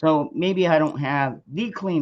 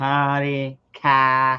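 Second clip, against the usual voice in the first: put-on Boston accent; 3 dB louder than usual. Imitating a girl from Boston: imitating a Boston accent. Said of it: "you could just tell the Boston accent automatically".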